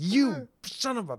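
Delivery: put-on madman yelling, high and wild. Recalling pointing at someone on screen like a madman, retelling own shouting. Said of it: "as I'm shouting".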